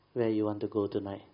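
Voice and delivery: plain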